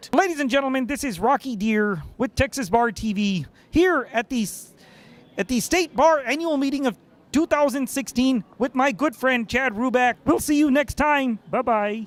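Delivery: high-pitched puppet frog voice. Signing off a Texas Bar TV segment at the meeting, in a Kermit the Frog voice. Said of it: "Sign off as Kermit".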